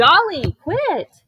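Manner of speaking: piercing, very loud, high-pitched yell. Speaker mid-lesson yells at a dog eating the futon: yelling. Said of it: "I'm sorry I just yelled".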